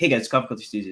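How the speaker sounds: rapid-fire, very fast, on autopilot. Showing how he says his usual video intro, very fast. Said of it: "like very fast".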